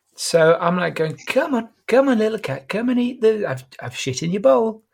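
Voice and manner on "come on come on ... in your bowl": put-on really nice, tender coaxing voice, pitched up. Retelling talking to the cat at feeding time, in a put-on really nice tone. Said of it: "but in a really nice tone".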